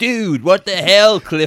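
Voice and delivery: put-on American accent in character voice. Describing a character's line in Clifford, in an American accent. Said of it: "he's doing an American accent. He's like".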